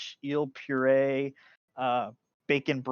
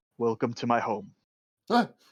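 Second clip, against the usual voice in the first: put-on creepy old man voice, lower; 2 semitones lower than usual. Narrating a scene, voicing an older gentleman welcoming guests to his home, creepy old man voice.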